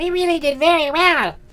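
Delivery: very high, delighted, pleased fairy exclamation. Reading a Christmas story, the fairy speaks in a pleased voice. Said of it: "cried the fairy in a pleased voice".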